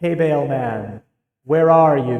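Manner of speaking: echoing, reverberant voice. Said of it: "I'm gonna try using my echoey voice".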